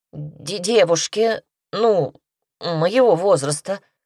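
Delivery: slow, drawn-out mumble, words barely formed. Petka answers the saleswoman who asks whom the dress is for; mumbled. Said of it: "промямлил Петька".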